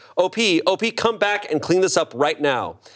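put-on condescending yelling, high pitched. Retelling how a woman yelled after him down an office hallway, imitating Kim yelling. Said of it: "she yelled".

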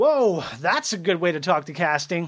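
heavy, mocking, dripping sarcasm. Retelling what a man talking to the casting associate said, retelling a very sarcastic remark. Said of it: "very sarcastically".

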